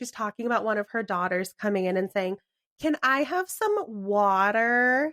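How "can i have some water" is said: put-on "water" very slow, grating, high, obnoxious American accent. Retelling a mother on a talk show imitating her daughter, obnoxious American accent. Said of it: "she does it in this obnoxious American accent".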